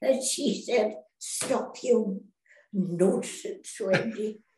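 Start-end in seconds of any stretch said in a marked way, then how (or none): 1.2-4.3 put-on Scottish-accented voice. Quoting what her scottish nurse kept saying to her, scottish accent. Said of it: "She was a Scot".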